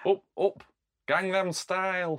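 put-on Yorkshire accent. In a comedy bit about Gangnam Style, doing a Yorkshire accent. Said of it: "that's difficult to say in a Yorkshire accent".

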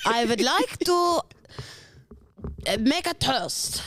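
put-on German accent. Running through accents on request, a speaker does a German accent.

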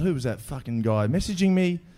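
plain

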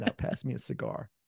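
breathy, hushed American accent. Joking that every American accent turns out the same: Bill Clinton impression. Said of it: "I always end up eventually sounding like Bill Clinton".

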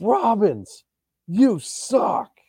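mock top-of-the-lungs scream, very high-pitched. Describing a man who yells at the punter Robbins, imitating a man's loud scream. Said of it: "He just screams so loud".

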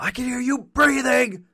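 yelled at a very high pitch. Making up a line for a movie character: imitating a yell. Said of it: "he could just yell out now".

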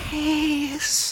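silly, very high, soft squeak.

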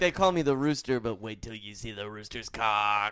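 put-on Italian accent. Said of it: "much more endearing with an Italian accent".

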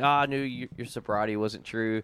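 ordinary delivery

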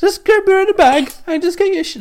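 very high cartoon voice. Doing the voice after being asked to, sounding like Swiss Morty. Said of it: "you sound like Swiss Morty".

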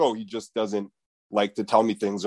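plain

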